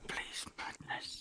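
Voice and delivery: slow, soft whisper.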